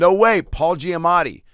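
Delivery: shrill, high, loud, drawn-out holler. Retelling spotting someone across the street: retelling a scream. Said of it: "a guy just screamed at him".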